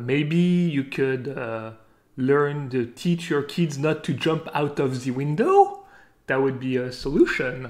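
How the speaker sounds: put-on French accent. Retelling what the French real estate agent said, in his French accent. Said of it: "he goes with his French accent".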